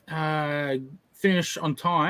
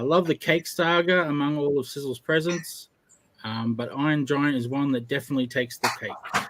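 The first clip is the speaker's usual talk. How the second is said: plain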